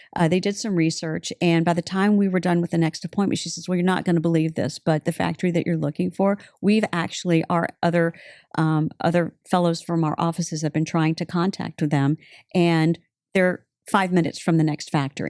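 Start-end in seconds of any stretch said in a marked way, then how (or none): none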